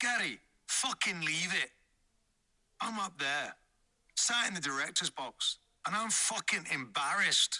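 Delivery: acted, put-on shouting. Retelling what a manager would shout: imitating someone shouting. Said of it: "And George would shout".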